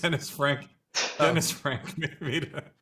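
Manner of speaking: talking through laughter. Explaining why they burst out laughing: laughing while talking. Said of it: "I'm laughing".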